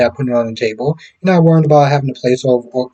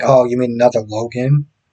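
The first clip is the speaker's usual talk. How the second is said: acted disdainful, superior, condescending tone. Retelling a remark about the Logans: imitating condescending tone. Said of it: "she says it in such this condescending way".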